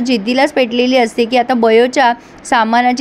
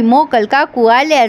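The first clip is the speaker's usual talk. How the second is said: ordinary talk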